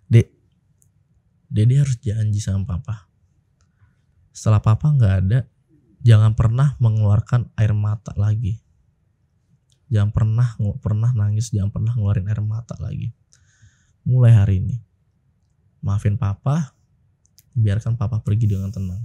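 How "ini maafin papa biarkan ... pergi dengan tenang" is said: ordinary talk, nothing marked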